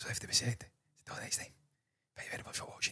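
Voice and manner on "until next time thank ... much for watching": whisper, much quieter. Signing off a reaction video, thanking viewers for watching: whispering. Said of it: "Don't know why I'm whispering".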